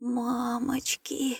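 faint, hushed, babbling half-whisper. Reading a story, the first-person narrator faces a huge bear: babbling in a half-whisper. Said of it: "пролепетал я шепотом".

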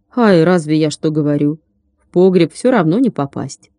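plain

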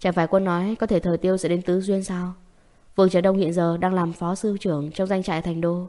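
plain

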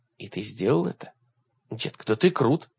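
ordinary delivery, nothing marked

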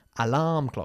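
stress on second syllable -larm in alarm. Teacher in a Spanish-language English class models stress on second syllable of alarm. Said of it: "Enfatizando la segunda sílaba".

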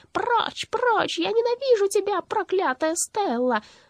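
very high, creaky witch shriek. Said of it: "закричала скрипучим голосом Бастинды".

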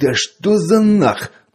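very high-pitched, angry, snarling growl. Pashka exclaims as he unbuckles his holster and draws his pistol, growled. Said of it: "прорычал Пашка".

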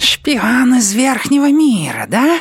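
very high, hissing rat-creature voice. As a narrator, read the rat leader's question to a captive pinned against a wall, hissing. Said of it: "прошипел предводитель крыситов".

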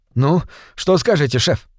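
ordinary delivery

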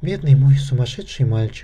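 ordinary delivery

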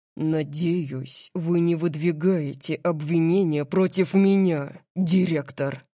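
threatening, menacing low growl. A narrator reads a man answering the director, a menacing low growl. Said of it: "прорычал Дариус, угрожающе низким голосом".

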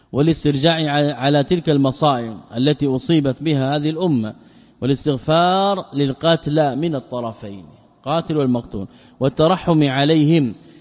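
ordinary delivery

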